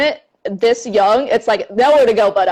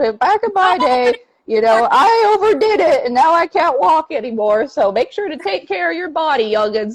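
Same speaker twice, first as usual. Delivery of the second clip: put-on higher-pitched old grandma voice; 6 semitones higher than usual. Encouraging someone to rest, switching into an old grandma voice. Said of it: "I'm talking like an old grandma".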